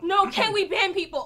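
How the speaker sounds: agitated, upset tone. Demanding that someone be banned for what was said: agitated, upset. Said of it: "take a breath".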